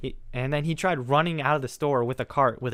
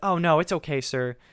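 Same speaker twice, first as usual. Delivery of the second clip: put-on soft-spoken voice; 3 semitones higher than usual. Retelling what a woman said to the man blocking her way, imitating a soft-spoken voice. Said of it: "she has such a soft spoken voice".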